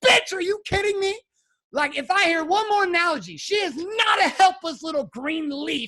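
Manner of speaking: put-on, high-pitched yelled outburst. Retelling yelling at the therapist during sessions: imitating his own past yelling. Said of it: "I would yell".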